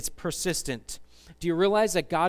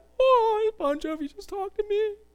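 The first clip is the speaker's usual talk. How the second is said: put-on very high, silly girlish squealing voice; 3 dB louder than usual. Speaker acts out being greeted by bon jovi, in a crazy girly voice. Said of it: "That's just my crazy girly voice".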